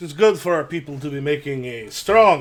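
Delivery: strong Russian-accented voice.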